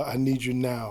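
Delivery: ordinary delivery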